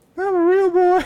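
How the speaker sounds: very high, storybook-style character voice. Repeating a line after being asked to say it like Pinocchio: Pinocchio voice. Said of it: "Can you say it like Pinocchio?".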